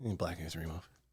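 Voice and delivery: soft, flat, level, unemphatic throwaway mumble. Mocking how another speaker flatly says a phrase. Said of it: "I don't sound like that".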